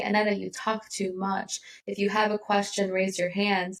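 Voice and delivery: plain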